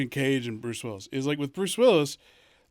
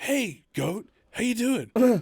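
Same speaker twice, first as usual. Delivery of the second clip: put-on tough-guy voice, higher-pitched; 8 semitones higher than usual. Retelling a sketch where he talks to animals: imitating Andy Samberg's Mark Wahlberg. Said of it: "he's like".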